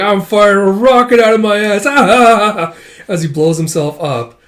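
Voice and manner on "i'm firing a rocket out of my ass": high loud goofball voice. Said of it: "with him being like".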